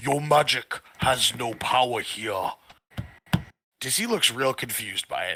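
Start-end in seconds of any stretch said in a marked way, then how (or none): 0.0-2.5 slow, much deeper, resonant voice. Narrator voices what speaks through Dizzy's mouth, in a much deeper, resonant voice. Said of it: "a much more deeper, resonant voice comes forth".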